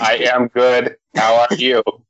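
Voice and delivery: robotic toy voice. Co-host answering a greeting during the podcast intro, Speak & Spell robot voice. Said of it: "with your speaking spell?".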